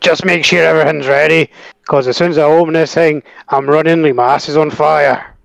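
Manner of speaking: terrible, laid-on, put-on Scottish accent. Taking a second try at the line, now in a scottish accent. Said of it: "Scottish accent".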